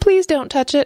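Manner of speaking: very high, pleading, distressed outcry. Reading a story, Whitey answers a frightening visitor at her house, crying out in great distress. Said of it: "cried Whitey, in great distress".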